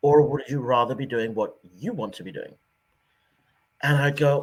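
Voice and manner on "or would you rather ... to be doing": put-on sarcastic voice with British accent. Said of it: "in a very typically British sarcastic way".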